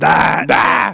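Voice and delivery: loud yell. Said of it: "And you just have to yell".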